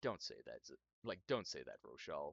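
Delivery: deep, low, gruff looming voice. Retelling a voice heard from behind, in a deep gruff voice. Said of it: "a deep, like gruff voice behind you".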